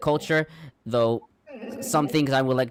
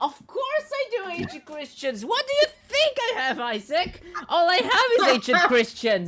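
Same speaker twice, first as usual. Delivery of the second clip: very high, swooping, up-and-down shouting. Answering a question about ancient Christians late at night: yelling. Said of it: "You're, like, yelling".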